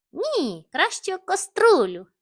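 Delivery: loud high-pitched shouting. Narrator reading all the little grumps answering together, shouting. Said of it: "закричали всі разом і розреготалися".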